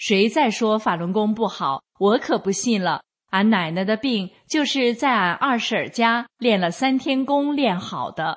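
normal talking voice

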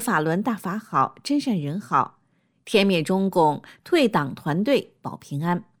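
plain

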